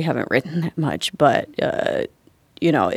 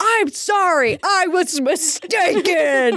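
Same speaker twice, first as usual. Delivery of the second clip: play-acted very high, very slow, shrill, drawn-out yell; 14 semitones higher than usual. Retelling yelling an apology into a man's face: imitating her own yelled apology. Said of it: "I just yelled in his face".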